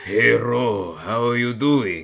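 bad French accent drifting into a Spanish accent. Friends practicing a French accent, speaker attempting it in a Spanish-sounding accent. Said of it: "I sound like a bit Spanish".

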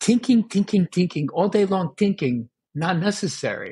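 high, sweet voice with Vietnamese accent.

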